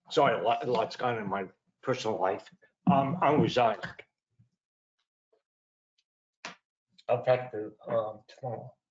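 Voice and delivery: emotional, choked up, holding back tears. Announcing a resignation to the commission, emotional, holding back tears. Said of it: "sorry for being emotional".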